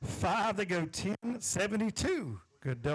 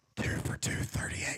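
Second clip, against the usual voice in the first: hushed, whispered voice. Not wanting to call the numbers out loud, whispered. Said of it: "I'll whisper it".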